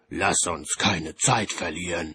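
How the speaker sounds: plain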